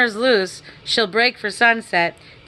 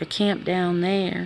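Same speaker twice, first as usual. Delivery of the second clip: low, hushed voice; 4 semitones lower, 6 dB quieter than usual. Narrator reads Slim's line after they halt at the rise, in a low voice. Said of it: "Slim said in a low voice".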